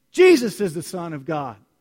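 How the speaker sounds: loud, confident, proclaiming tone. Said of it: "you can say it".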